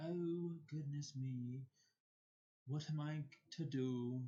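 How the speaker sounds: bad sarcastic put-on British accent, very slow, drawn way out. Saying a mock worried line sarcastically: sarcastic terrible British accent. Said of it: "sounded to some of you like, like a British accent".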